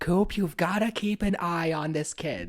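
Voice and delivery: very high-pitched, shouted voice. Retelling a movie scene where Gordon Cole phones Coop: imitating Gordon Cole shouting. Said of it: "he's, like, shouting it".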